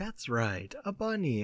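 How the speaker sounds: gentle, soft, calm, unhurried voice. Retelling a cartoon scene's setup: soft, calm Blarney voice. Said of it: "just soft, calm voice".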